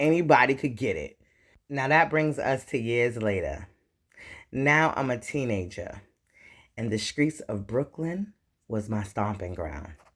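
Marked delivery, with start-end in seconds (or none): none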